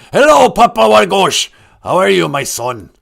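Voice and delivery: loud, rough, bellowing salty pirate voice. Voicing the Great Spirit greeting Papa Wagosh, sounding like a pirate. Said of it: "He sounds like a pirate".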